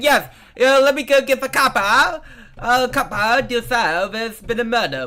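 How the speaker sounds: put-on terrible, very loud, slow British accent. Playing a character reporting a murder to a copper, terrible British accent. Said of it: "that's probably a terrible British accent".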